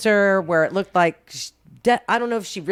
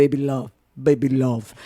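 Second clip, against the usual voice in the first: slow, put-on Brazilian accent; 7 semitones lower than usual. Retelling how the husband would say a phrase: imitating a brazilian accent. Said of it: "with his Brazilian accent".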